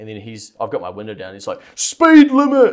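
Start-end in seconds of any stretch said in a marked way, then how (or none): 1.7-2.7 put-on shrill, very loud, screeching old man's shout. Retelling a man on the road shouting at the driver: imitating a man yelling. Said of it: "yelling at me".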